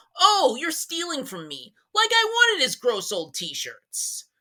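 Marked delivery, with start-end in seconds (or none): 0.2-1.7 mock pissy, irritated tone. Retelling what an ex wrote about stolen stuff: imitating someone getting pissy. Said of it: "He got all pissy".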